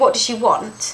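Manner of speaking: ordinary delivery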